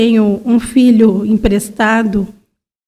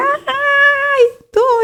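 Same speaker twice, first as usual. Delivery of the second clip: play-acted high yell, ai stretched long. Retelling how she answered while pregnant: imitating her own past shouting. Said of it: "ficava gritando".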